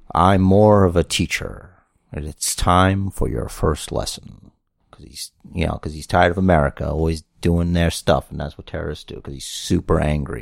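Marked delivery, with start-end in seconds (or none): 0.1-4.5 slow, menacing, threatening villain-leader voice. Doing an impression of a movie villain: Mandarin impression. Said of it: "I'm gonna do the impression".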